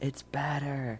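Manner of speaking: tiny, quiet little inner voice. Voicing a voice heard in a character's ear: tiny voice in your ear. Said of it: "a tiny voice in your ear".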